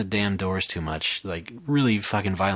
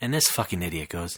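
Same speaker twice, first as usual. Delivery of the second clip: plain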